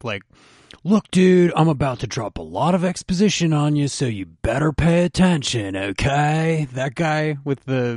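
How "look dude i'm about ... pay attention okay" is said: Southern California punk rocker voice. Quoting the weapon shop owner from an episode, in a SoCal punk rocker voice. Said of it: "that SoCal punk rock guy".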